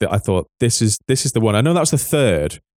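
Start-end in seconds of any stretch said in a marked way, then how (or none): none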